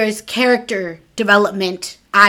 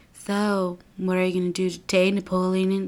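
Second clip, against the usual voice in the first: put-on bored, drowsy, half-asleep, uninterested tone; 8 dB quieter than usual. Retelling what a kid asks the boy next to him, imitating an uninterested tone. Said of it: "in like the most uninterested tone or half asleep tone".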